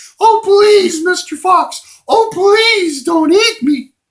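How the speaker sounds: very high, very loud silly goose voice. A goose addresses Mister Fox, silly goose voice. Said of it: "a silly Goose".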